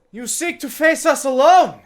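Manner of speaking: very loud, very high, booming call. A war chiefess steps forward before a silent crowd: booming voice. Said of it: "Booming with booming voice".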